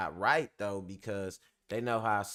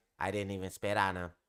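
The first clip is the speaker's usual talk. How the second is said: flat, one-note monotone delivery. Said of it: "I'm trying to do a [name] impression and my voice monotone as hell".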